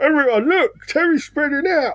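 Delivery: high announcer-style callout. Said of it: "old Table Talk Terry here".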